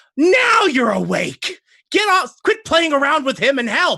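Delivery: very high, shrieked cry. Voicing a character who shrieks at an ally to help: shrieking in character. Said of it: "she shrieks out".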